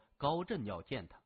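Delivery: ordinary delivery, nothing marked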